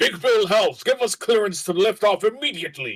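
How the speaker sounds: high, loud urgent shout. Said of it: "he hits the comm and is like".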